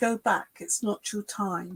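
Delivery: normal talking voice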